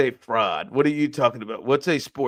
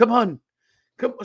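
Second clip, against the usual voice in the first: put-on Brazilian accent, higher; 10 semitones higher than usual. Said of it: "she's talking with an accent".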